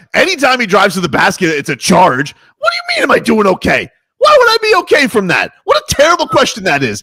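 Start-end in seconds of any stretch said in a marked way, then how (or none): 2.5-7.0 shouting, higher. Answering another speaker who asked if he was okay: yelling. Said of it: "Why are you so for yelling at me like that?".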